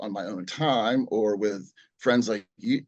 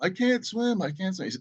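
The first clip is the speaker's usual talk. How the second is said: frantic, panicked, tearful words cried out; 9 semitones higher than usual. Retelling being kicked off the dock by Dad, imitating crying to him. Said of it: "like crying to him".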